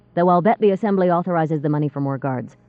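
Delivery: ordinary delivery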